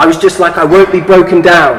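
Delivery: ordinary delivery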